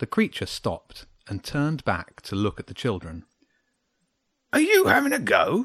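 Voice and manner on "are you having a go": defensive, bristling, pitched up. Narrating a grumpy hedgehog answering the children's question, defensive. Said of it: "it said defensively".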